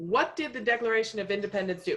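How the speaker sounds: whole line rattled off very fast, rapid-fire. Asking a quiz question in full, warning to listen carefully: very fast. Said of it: "I'm going to say it very fast".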